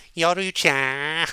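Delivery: high, drawn-out, whiny anime voice.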